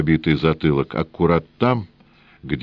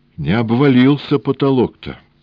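high, quavering, shaken, trembling voice; 8 semitones higher, 4 dB louder than usual. Reading a story, Senka speaks to the engineer in a trembling voice. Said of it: "сказал Сенька инженеру дрожащим голосом".

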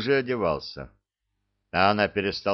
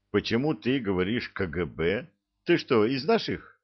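plain reading voice

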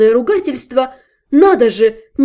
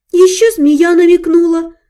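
high, frightened mumble; 6 semitones higher than usual. In bed, she answers the man questioning her, frightened mumble. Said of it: "Испуганно пробормотала я".

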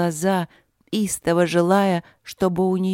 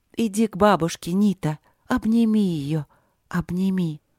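whispered, slower. Narrator reads a little girl speaking to her aunt, whispered. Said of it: "шепнула".

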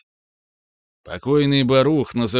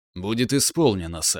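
plain reading voice

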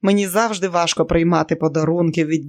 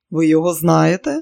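surprised, astonished, louder; 3 dB louder than usual. Learning she knows his favorite restaurant, he asks, surprised. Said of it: "здивовано спитав Джордж".

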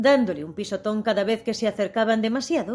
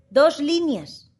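high, abrupt shout; 6 semitones higher, 4 dB louder than usual. The Mock Turtle cuts in as the Gryphon explains the lobster dance to Alice: shouted. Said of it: "gritó la falsa tortuga".

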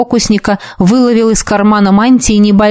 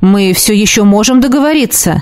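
plain reading voice

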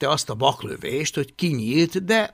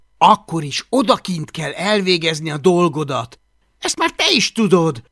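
slightly impatient tone with a raised voice; 5 dB louder than usual. Narrator reads a character's reply to another's whining, a bit impatient. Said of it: "Most már kissé türelmetlenül".

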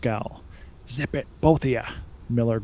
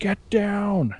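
shrill, very high, piercing scream; 9 semitones higher than usual. Someone warns the others as a drone with a chainsaw attacks: screaming. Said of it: "Miller screamed".

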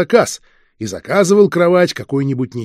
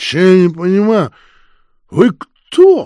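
put-on bleary drunken voice, pitched up; 5 semitones higher, 4 dB louder than usual. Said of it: "пьяным голосом спросила Неговелова".

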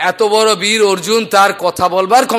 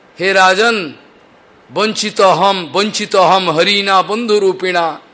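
plain

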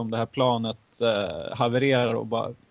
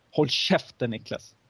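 put-on hissing voice. Retelling what a man hissed at the speaker, imitating the hiss. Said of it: "då väser Tommy till".

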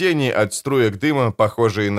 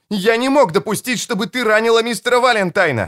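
very high shout over noise; 11 semitones higher than usual. Tom yells to a girl about to jump, over a loud roar: yelling over the noise. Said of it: "заорал он, перекрикивая грохот брюха".

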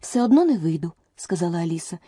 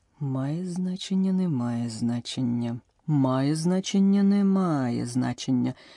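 low, quiet mumbling, muttered; 4 semitones lower, 6 dB quieter than usual. A narrator reads the king trying out two phrasings aloud, muttered. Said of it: "забурмотів він".

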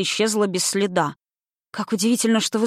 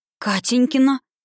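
suddenly weak, faint, faltering, much higher pitch; 5 semitones higher than usual. Sasha asks the question again, suddenly gone weak. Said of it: "враз ослабев переспросила Саша".

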